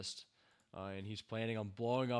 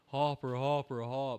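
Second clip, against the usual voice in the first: scream, higher and louder; 4 semitones higher, 8 dB louder than usual. Retelling a scene where a character is left behind: imitating Eleven screaming. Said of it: "Eleven is screaming".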